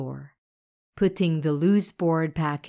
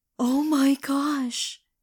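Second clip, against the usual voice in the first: very high, gasped-out words; 9 semitones higher than usual. Spirit sees the egg in Minty's arms start to move, gasping. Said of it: "gasped Spirit".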